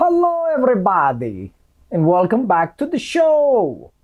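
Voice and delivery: high, swooping, slow sing-song drawl, show stretched long. Opening the video with an impersonation of Gru. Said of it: "That's my impersonation of Gru".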